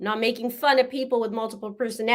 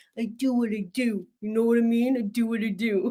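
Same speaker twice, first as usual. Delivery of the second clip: put-on poor Russian tough-guy accent. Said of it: "I don't even know if that's gangster".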